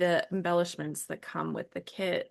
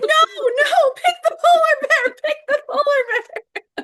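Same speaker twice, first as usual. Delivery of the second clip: frustrated mock-scream, much higher and louder; 13 dB louder than usual. Speaker recalls a radio show contestant's answer, retelling screaming at the radio. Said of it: "I was like screaming at the radio".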